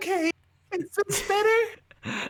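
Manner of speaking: very high voice. After the other speaker complains about the dropped pitch, speaking a little higher. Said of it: "I'll speak a little higher".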